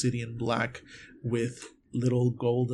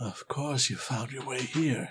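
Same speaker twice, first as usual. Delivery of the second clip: hushed whisper. Narrating another voice coming from behind the listener, whispering. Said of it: "another whisper coming from behind you".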